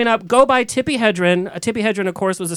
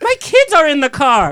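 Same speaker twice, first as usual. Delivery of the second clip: acted-out mock yelling at a slower pace; 6 semitones higher, 4 dB louder than usual. Speaker retelling a woman who started a fight yelling at the speaker's mom. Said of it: "she was yelling at my mom".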